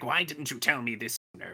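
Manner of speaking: creepy scientist character voice. Retelling a scene from the episode, imitating Kurotsuchi's voice. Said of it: "That was a good imitation".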